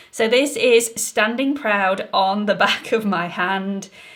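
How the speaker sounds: laughing through the words. Showing a product on the back of the hand: laughing while talking. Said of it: "I can't say that without laughing now".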